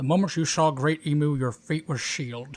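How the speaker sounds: put-on mustached old man voice. Reading a scene aloud as the mustached elder: good mustache voice. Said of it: "that was a good mustache voice".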